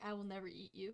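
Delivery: quiet, soft, hushed half-whisper. Amalthea pats Garlic's side while the others talk about eating horses; half-whispering. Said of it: "pat Garlic's side and whispers like".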